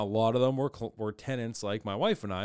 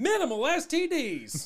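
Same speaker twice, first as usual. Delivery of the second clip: put-on Southern accent, very high, sing-song, swooping; 4 dB louder than usual. Improvising a mock brothel commercial: southern accent. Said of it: "I don't know why it's a southern accent".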